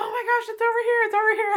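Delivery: very high, loud calling-out yell. Retelling how another birder yelled that she found the bird: imitating Audrey yelling. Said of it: "started, like, yelling".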